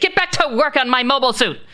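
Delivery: screaming. Voicing a character who screams at the crowd in the hangar: screaming. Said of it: "Lady Sark screams".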